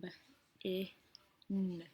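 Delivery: slow robotic voice, sounded out letter by letter. Showing friends how to sound out a spelled word: robotic, sounding out slowly. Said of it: "I try to sound um, like a robot, and I try to sound it out really slow".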